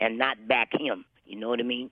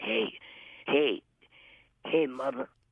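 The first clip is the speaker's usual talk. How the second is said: gruff, rough calling-out voice; 3 semitones higher than usual. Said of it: "He had a real gruffy voice".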